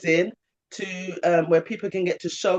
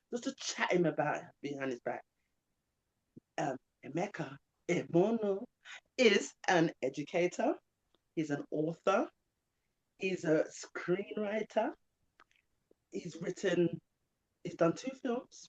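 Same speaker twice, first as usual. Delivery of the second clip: whispering, much quieter and slower; 10 dB quieter than usual. Talking about an absent guest behind his back, whispering. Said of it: "You don't have to whisper what it is".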